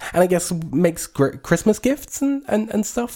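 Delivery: tiny high-pitched voice. Describing a small creature and how it speaks, in a little high-pitched voice. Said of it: "speaks in a little high-pitched voice like this".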